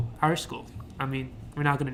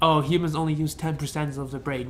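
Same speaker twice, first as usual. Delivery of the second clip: normal talking voice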